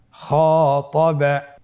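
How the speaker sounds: slow, stretched, drawn-out full word.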